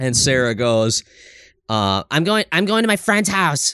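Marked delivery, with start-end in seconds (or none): 2.1-3.7 all-attitude bitchy voice, higher tone. Retelling what Sarah said about leaving for a friend's house: imitating Sarah being bitchy. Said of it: "like, all bitchy".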